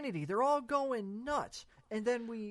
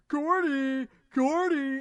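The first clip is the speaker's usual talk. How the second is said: very loud, scornful, condescending screaming; 4 semitones higher, 9 dB louder than usual. Recounting a film scene where a man yells a name, retelling a condescending scream. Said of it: "yelling, screaming Gordy in just a condescending tone".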